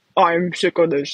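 put-on low, grumpy, grumbling old man voice. Imagining what the pet would say if it could talk: Fabio as mock-grumpy old man. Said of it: "Fabio would be like a grumpy old man".

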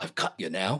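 put-on slight, not-quite British accent. Retelling words heard on an EVP recording, in an almost British accent. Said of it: "almost like a British accent".

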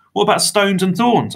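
very high grumbling. Answering a vampire about walking barefoot, the narrator speaks, grumbling. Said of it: "I grumbled".

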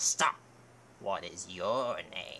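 put-on deepened old man voice. Dubbing the keeper of the Bridge of Death stopping Arthur, in a pitch-deepened bridgekeeper voice. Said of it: "Look, there's the old man from scene 24. ... He is the keeper of the Bridge of Death. ... I will be using a pitch changer to just artificially deepen my voice while I do random stuff".

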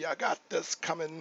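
aggressive male voice, hit hard like angry warrior. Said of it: "But I love the aggressive".

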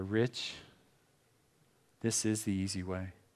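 put-on gentle whisper. Speaker quotes God answering his prayer, retelling a gentle whisper. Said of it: "he gently whispers into my ear".

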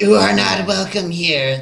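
snarled, growling goblin monster voice. Game master voicing the nearest goblin confronting the players, snarling goblin voice. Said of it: "the nearest one snarls".

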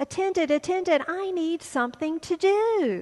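loud, high-pitched shout with do stretched out long. Telling a story, a bored man calls for the attendant: shouting for the attendant. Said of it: "he shouted out".

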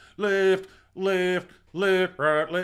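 like a drill sergeant. Recalling the man who called marching cadence, like a drill sergeant. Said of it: "to sound like an actual drill sergeant".

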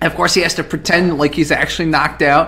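normal talking voice

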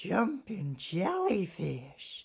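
high, swooping, squealed exclamation. A narrator reads a character's exclamation on peeking out of his cave, squealing. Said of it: "he squealed".

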